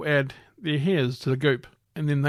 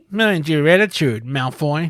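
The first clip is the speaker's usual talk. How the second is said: loud cartoonish voice, words dragged out slowly; 5 dB louder than usual. Acting out a scene, telling Malfoy off: sounds like Cartman from South Park. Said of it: "You sound like Cartman from South Park".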